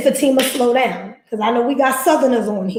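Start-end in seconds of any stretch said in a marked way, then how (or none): none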